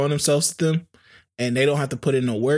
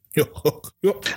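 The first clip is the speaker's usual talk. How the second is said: put-on voice, laughing; 2 semitones higher than usual. Trying to do the Steve Harvey laugh for the others. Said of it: "I was trying to do the Steve Harvey laugh".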